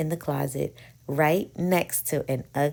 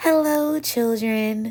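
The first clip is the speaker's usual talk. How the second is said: sweetly spoken, high-pitched; 7 semitones higher, 5 dB louder than usual. Someone arriving greets the waiting children in a sweet voice. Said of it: "someone said in a sweet voice".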